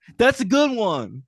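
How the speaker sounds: very high character voice, pitched way up. Doing an impression of Radio after offering to: Radio impression. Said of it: "you want to hear my impression of Radio?".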